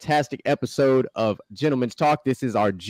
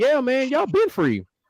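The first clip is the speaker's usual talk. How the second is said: very high, easygoing, drawn-out casual slang; 12 semitones higher than usual. Acting out the Union telling freed slaves the news: acted in modern casual slang. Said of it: "they didn't talk like this in, in".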